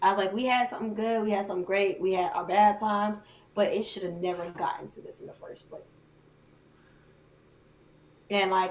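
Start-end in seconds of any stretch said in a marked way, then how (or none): none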